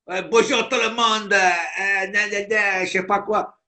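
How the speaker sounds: exaggerated, overacted put-on Marseille accent. Mocking a guy who overacts as he greets everyone, put on an exaggerated Marseille accent. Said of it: "quand il exagère sur l'accent marseillais".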